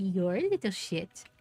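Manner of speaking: affectionate, sweet, gentle pet-talk tone. Showing how the speaker talks to the cats, sweet nice voice. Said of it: "I do it in a nice voice".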